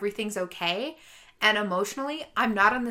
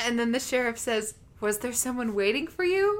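ordinary talk, nothing marked

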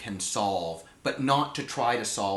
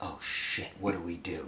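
low, hushed mutter under the breath; 5 semitones lower, 8 dB quieter than usual. Recounting what the other actor said to him, retelling an under-breath mutter. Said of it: "he goes under his breath".

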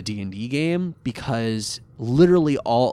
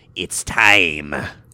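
put-on evil voice, much lower and louder; 5 semitones lower, 5 dB louder than usual. Recounting the moment Bakura turns full evil, mock-menacing Bakura voice. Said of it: "goes menacingly".

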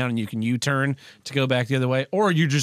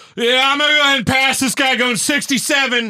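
very high, loud voice with pitch pushed way up; 12 semitones higher, 7 dB louder than usual. Retelling a four-door Volvo driver cutting in ahead: imitating a Volvo driver cutting in. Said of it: "this dude in, like, a fucking four-door Volvo's like".

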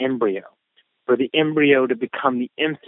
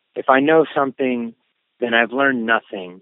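ordinary talk

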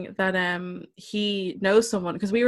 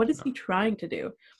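ordinary delivery

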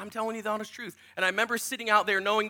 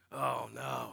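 very low, deep man's voice; 9 semitones lower, 8 dB quieter than usual. Retelling getting into the grandfather's car while crying: imitating grandfather's deep voice. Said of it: "very deep man voice".

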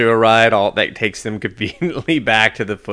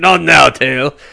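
loud, booming, stupid-sounding put-on character voice; 4 semitones higher, 7 dB louder than usual. Recounting someone's joke where Splinter scolds his own tail, in a stupid Splinter voice. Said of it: "his stupid Splinter voice going".

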